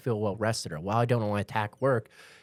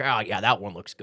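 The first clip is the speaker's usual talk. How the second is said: mock distracted, dismissive dad voice. Retelling not being present while shopping: imitating a distracted sitcom dad. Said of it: "dad from the sitcom who's like".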